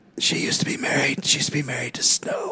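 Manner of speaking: hushed whisper. Reading a campfire tale aloud to the others, whispering. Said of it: "why are we whispering?".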